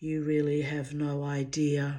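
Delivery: most menacing, darkest, sinister tone. Retelling the reply to a loved one who called the speaker a harmless psycho: mock-sinister dark voice. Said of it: "I said in my most sinister, dark voice".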